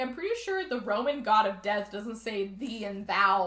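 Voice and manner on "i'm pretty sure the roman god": ordinary delivery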